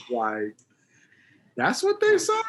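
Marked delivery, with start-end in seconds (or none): 1.5-2.4 very high put-on voice, pushed way up. Recalling first seeing a young group on TV, in a high voice. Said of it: "I went in my high voice".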